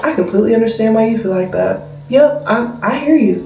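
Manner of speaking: quiet, low, respectful, reassuring and firm tone. Standing ground but staying respectful with someone: low, respectful voice. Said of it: "I'm going to talk to you so low, like".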